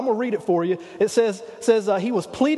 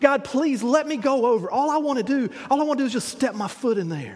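put-on, begging, pleading voice; 3 semitones higher than usual. Retelling how Moses pleaded with God: Moses pleading with God. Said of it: "he was pleading with God".

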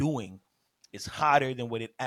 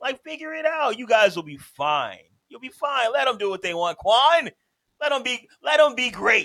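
very high, very loud, shrill sarcastic fake sincerity; 12 semitones higher, 10 dB louder than usual. Arguing about a wrestling company with other speakers: put-on sarcastic praise. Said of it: "This man Sylvan is being sarcastic as hell".

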